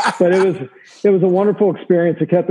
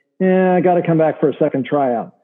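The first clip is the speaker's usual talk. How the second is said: normal talking voice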